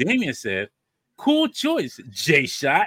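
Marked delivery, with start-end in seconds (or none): 1.2-2.9 very slow, drawn-out, sing-song, heavily sarcastic tone. Rereading a viewer's comment after being called sarcastic: even more sarcastic. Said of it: "It sounds worse".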